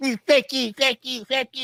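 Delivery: mocking, slurred old man voice. Mocking how a very old man talks after a stroke, repeating swearing in a slurred old man voice. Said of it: "you talk like this".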